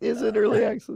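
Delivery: high, creaky, mock incredulous tone.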